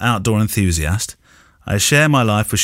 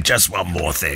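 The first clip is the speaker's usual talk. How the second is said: deep, gravelly growled delivery; 4 semitones lower, 4 dB quieter than usual. Showing the other speaker the Columbo catchphrase: deep gravelly Columbo voice. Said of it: "That deep, gravelly".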